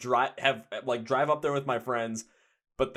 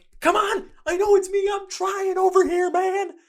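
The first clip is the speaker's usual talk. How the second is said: flustered, frantic, high and loud voice; 8 dB louder than usual. Acting out someone whose phone goes off in a movie theater, imitating a frantic person. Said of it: "frantically trying to turn off".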